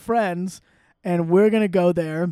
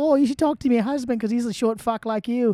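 put-on high South African accent drifting toward Australian; 5 semitones higher than usual. Quoting a woman from South Africa: imitating a South African accent. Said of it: "every time you do that, it sounds Australian".

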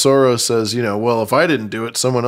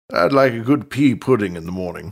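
put-on stuffy old British voice; 2 semitones lower than usual. Discussing how a character sounds, doing a stodgy old British Othos voice. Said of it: "Very old, stodgy British".

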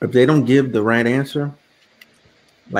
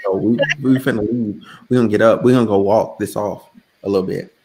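ordinary delivery

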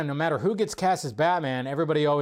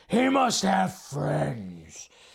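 over-the-top gargly voice, rough, swooping, very slow. Imitating Bale's Batman voice in Dark Knight: over-the-top gargly Bale Batman voice. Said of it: "that's where it gets really, like, over the top".

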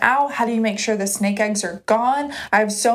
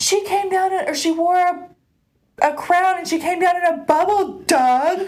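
high-pitched, exasperated, shrieking screaming outburst; 7 semitones higher than usual. Speaker retells a man in a video screaming at Doug, retelling a scream. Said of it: "he's like screaming at Doug".

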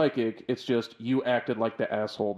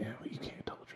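hushed whisper, quieter; 15 dB quieter than usual. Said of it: "and they're just whispering".

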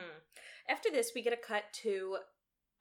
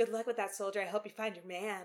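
usual speaking voice

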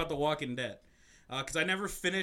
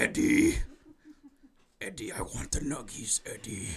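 swooping, sing-song character voice, pitch swinging wildly; 3 semitones lower, 3 dB louder than usual. Acting out a made-up movie scene at a Burger King: Venom voice. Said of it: "And Venom's like".

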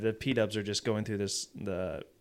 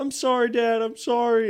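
put-on tearful crying child voice, higher and louder; 13 semitones higher, 6 dB louder than usual. Retelling how a crying kid apologized to his dad: imitating a crying kid. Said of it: "he's just, like, crying".

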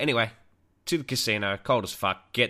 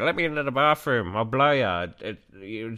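put-on drunk old man voice, slower. Retelling what a man said in a bar, imitating a drunk old man. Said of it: "I'm just trying to sound drunk".

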